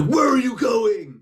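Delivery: shrill, very high-pitched dude-bro holler. Picturing a dude bro ghost hunter running: imitating a dude bro yelling. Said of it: "a dude bro running, being like".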